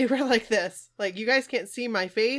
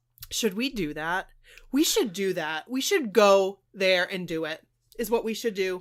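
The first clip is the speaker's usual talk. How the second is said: ordinary delivery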